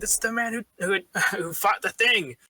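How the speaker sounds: very high-pitched, shrieking scream. Game master voicing grateful merchants on the docks: screaming merchants. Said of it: "some of them also start screaming".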